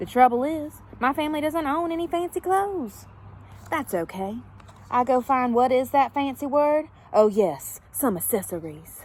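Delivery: put-on, exaggerated posh fancy Southern accent. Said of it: "what I sound like with a fancy, southern accent".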